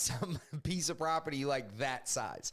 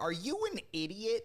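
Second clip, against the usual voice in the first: put-on irritated comedian voice, pitched higher; 6 semitones higher than usual. Retelling how Tony Hinchcliffe reacted to loud soundboard hits: Tony Hinchcliffe impression. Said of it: "pretty good impression of Tony Hinchcliffe".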